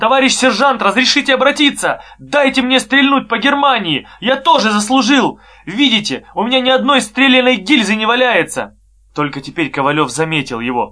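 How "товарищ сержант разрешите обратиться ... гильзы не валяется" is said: insistent, shaky, trembling, high-pitched shout. A boy shouts to the sergeant over gunfire, demanding trembling shout. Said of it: "требовательным дрожащим голосом крикнул".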